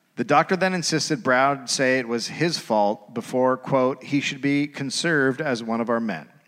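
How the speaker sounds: ordinary delivery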